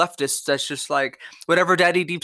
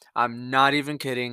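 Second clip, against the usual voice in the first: usual speaking voice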